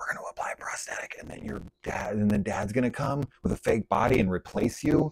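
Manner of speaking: quick quiet whisper.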